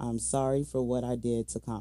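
plain

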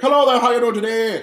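clichéd stock Irish accent. Saying which accents are easier to do, in a stereotype Irish accent. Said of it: "stereotype Irish".

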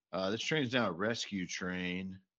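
normal talking voice

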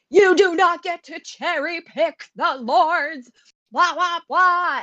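mock very high, drawn-out yelling. Discussing a show, quoting a character scolding others, retelling a character yelling. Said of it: "she is yelling at them like".

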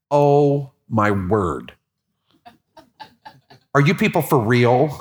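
very slow, mocking, sarcastic disbelief. Retelling what the neighbor's granddaughter said: imitating a sarcastic girl. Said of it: "She was very sarcastic".

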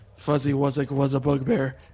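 whispered, hushed aside. Walking past another character, a player's character says this in passing, whispering. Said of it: "I whisper as I walk past".

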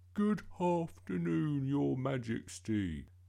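slow, high, put-on polite voice, mouthful of gum. A boy practises greeting the Queen with his mum: put-on polite voice. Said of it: "Why are you talking like that?".

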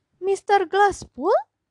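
loud, high exclaiming cry. Narrator reading the lawyer's line on seeing a visitor, exclaiming. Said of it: "Seru pengacara itu".

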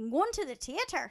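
put-on Irish accent, eased into gradually. Showing another speaker how to get into an Irish accent. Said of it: "You know how you can get into an Irish accent?".

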